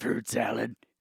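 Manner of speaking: put-on chimpanzee character voice. Retelling how a line sounded in his head, in a chimpanzee character voice. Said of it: "in the chimpanzee's voice".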